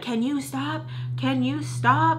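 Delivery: high, mild, toned-down, acted-out yell. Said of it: "my mom's yelling at him".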